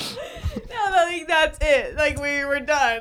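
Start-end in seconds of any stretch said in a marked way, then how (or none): 0.0-0.9 high, soft, broken-up laughing. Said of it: "We both broke at the same time".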